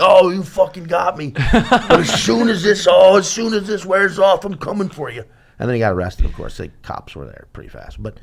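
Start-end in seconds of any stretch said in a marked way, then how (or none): 0.0-5.2 mock drunk man's high, blustering shout. Retelling how a very drunk man reacted after being sprayed, retelling his shouting. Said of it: "Like he was just shouting".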